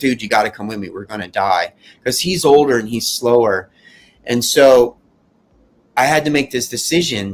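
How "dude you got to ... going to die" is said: put-on tearful pleading voice, faster. Recounting an escape, the speaker re-enacts crying while begging his friend to come. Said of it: "And I start like crying".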